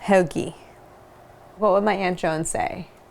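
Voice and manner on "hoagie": the word hoagie said with a Baltimore accent. Asked to try the word in a Baltimore accent, saying "hoagie". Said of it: "Try it with a Baltimore accent".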